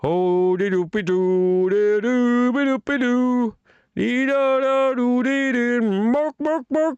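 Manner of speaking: Swedish-accented gibberish, high-pitched and slow. The speaker shows the accent meant, in Muppet Swedish accent gibberish. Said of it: "A Swedish accent, like the Muppet".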